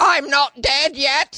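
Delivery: very high, very slow, drawn-out comic put-on accent. Quoting a line from a favorite comedy film: Monty Python accent. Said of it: "It's like the Monty Python accent".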